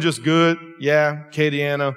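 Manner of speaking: put-on flat monotone. Speaker retells a kid's replies to his attempt at conversation, imitating a kid's monotone. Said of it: "that was his monotone".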